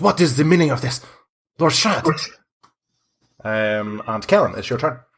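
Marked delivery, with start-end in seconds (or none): 0.0-2.3 furious, high, angry shout. A better-groomed man arriving with his group calls out to the lord: shouting. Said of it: "he shouts".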